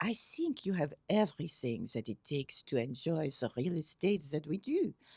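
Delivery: lovely, put-on French accent. Retelling what a real estate head told the speaker: Micheline's French accent. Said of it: "in her lovely French accent".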